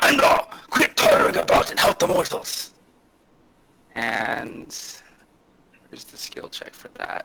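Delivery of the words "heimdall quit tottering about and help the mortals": very loud, booming god voice. In a tabletop game, the speaker voices a voice booming out: booming Odin voice. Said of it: "a voice booms out and sounds just like Odin".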